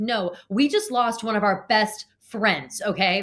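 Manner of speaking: put-on straight-faced, earnest, slow, dead-serious delivery. Retelling what a contestant said to another, imitating a straight-faced retort. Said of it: "how can you say that with a straight face".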